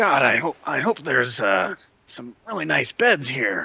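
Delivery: whispered speech. Whispering to the players nearby, hoping for good beds: whispering in character. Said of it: "I just whisper".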